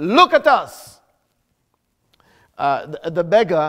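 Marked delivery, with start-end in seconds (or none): 0.0-1.0 acted firm, commanding voice, higher in pitch. Preaching, acting out what he said to the beggar, retelling a firm command. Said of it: "in that firm, commanding voice".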